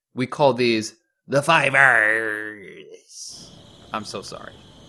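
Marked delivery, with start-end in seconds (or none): 1.3-3.5 very slow pirate drawl with stretched R's. Host repeating a line the way a pirate would say it, pirate voice. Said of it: "Or if you're a pirate, you would say this".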